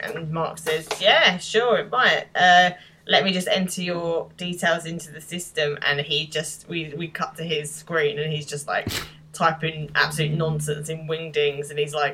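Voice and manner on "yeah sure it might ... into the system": usual speaking voice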